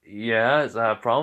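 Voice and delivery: ordinary talk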